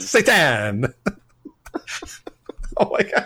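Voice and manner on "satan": enthusiastic, eager Italian accent. Reading a title aloud and stumbling over a word, in an enthusiastic Italian-sounding accent. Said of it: "you sound like an enthusiastic like Italian devil".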